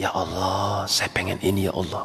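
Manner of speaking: barely audible, very soft and hushed. Demonstrating a prayer only oneself can hear, very soft, hushed. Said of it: "Ini nidaan khafiyya".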